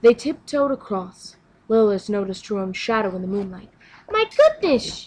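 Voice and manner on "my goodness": very high-pitched exclaiming. Noticing her own shadow in the moonlight, exclaiming. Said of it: "she exclaimed".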